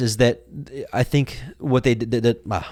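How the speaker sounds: stuttering, stammering speech. Making a point about patriotism and getting tangled in words: stuttering. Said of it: "I'm s-, stuttering here".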